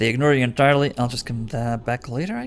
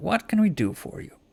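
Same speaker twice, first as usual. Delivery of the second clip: lowered voice, quieter; 7 semitones higher, 5 dB quieter than usual. Voicing a shopkeeper who turns to a customer: lowered voice. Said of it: "She lowers her voice".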